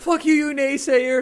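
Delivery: very high, very slow, loud, shrill, drawn-out rant.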